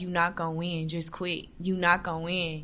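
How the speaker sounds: acted-out whispering. Recalling a security guard whispering in their ear, imitating a whisper in the ear. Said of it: "whispering in my ear like".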